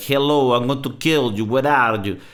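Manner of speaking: rough, heavy Russian accent in English. Showing how Russians speak English: Russian accent in English. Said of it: "the English Russian accent".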